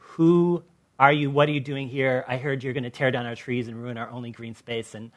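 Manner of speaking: plain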